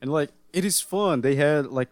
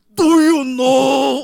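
put-on grumpy old man voice, higher and louder; 12 semitones higher, 11 dB louder than usual. Retelling a police scene from a first episode: imitating Norio Wakamoto. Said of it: "with his voice, it's just hilarious".

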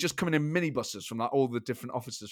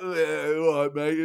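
play-acted tipsy, slightly sleazy, leery tone, drawn out; 2 semitones higher, 5 dB louder than usual. Recounting an embarrassing moment, the speaker imitates someone mock-drunk and slightly leery. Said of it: "Like drunk, slightly leery".

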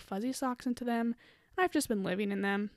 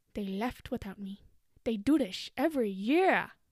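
put-on cartoon sloth voice, slower. Snuggled up watching the movie, saying all the lines in a Sid the Sloth voice. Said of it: "saying all of Sid's lines and like a really attractive voice".

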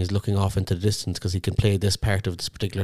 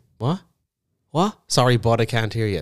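put-on dismissive, brushing-off voice; 3 semitones higher, 3 dB louder than usual. Imitating Tom turning away someone who talks to him on stage: imitating Tom brushing someone off. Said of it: "It's so funny".

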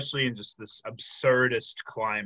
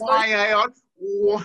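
shrill, booming put-on old-time gangster voice; 12 semitones higher, 10 dB louder than usual. Acting out bumping into a stranger, answering in a mock 1940s gangster voice. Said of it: "like, 1940s gangster ass".

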